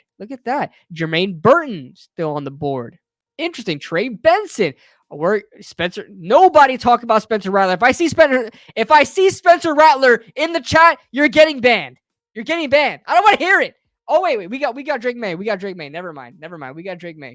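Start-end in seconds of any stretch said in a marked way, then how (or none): 7.7-13.8 very high, loud, raised shout. Streaming a draft and addressing the chat, yelling. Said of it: "I didn't mean to yell at you".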